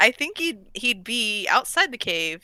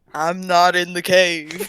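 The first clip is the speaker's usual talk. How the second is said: put-on cow voice, lower and louder; 5 semitones lower, 4 dB louder than usual. Voicing a sound from a cave after a spell: cow voice. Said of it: "a cow voice saying".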